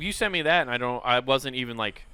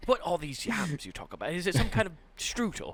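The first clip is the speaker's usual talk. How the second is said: put-on British accent, pitched up; 6 semitones higher, 5 dB quieter than usual. Improvising settlers imitating home, answering another settler: put-on british accent. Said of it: "it's very close to a British accent".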